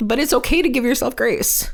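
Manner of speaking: moved, getting emotional. Speaking about their own perfectionism, the speaker admits mid-thought they are getting emotional. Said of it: "I'm getting emotional".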